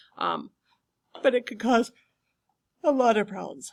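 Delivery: words stretched by a yawn. Explaining to listeners, yawning. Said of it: "I'm sorry, I'm yawning".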